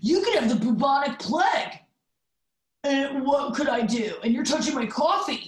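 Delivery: restrained put-on male yell. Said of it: "the fact that you're yelling".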